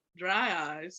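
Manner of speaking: sleepy, dull, droning commercial announcer voice. Showing how a dull speaker would sound: dry eye commercial guy tone. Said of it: "the dry eye commercial guy tone".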